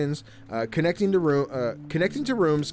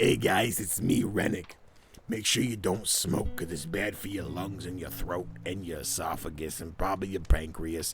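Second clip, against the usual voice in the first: very low, hushed public service announcer voice; 8 semitones lower, 6 dB quieter than usual. Introducing himself to the guys, in an anti-smoking commercial voice. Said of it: "I sound like one of the smoking commercials".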